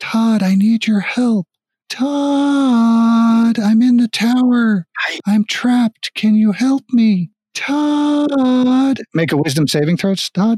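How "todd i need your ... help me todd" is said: light, high, slow feminine calling voice. Voicing someone trapped in a tower, calling to a player for help: light feminine voice. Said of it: "a feminine light voice calling out to Todd".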